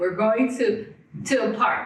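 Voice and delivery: mock broken English speech. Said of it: "he's trying to speak in broken English".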